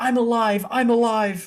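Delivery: high, stretched-out, drawn-out in-character cry. Voicing a freaked-out character yelling out as someone falls: yelling in character. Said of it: "He yells out".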